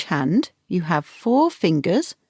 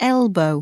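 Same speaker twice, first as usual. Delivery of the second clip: elbow with stress on first syllable EL. Showing how to pronounce the body part: stress on EL in elbow. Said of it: "Stress on the first syllable".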